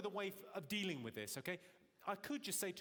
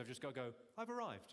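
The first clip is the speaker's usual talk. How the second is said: ordinary talk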